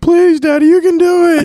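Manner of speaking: put-on shrill, very high, very loud kids' screaming. Father retelling what his kids screamed at his first tournament, imitating kids screaming. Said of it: "My kids were screaming".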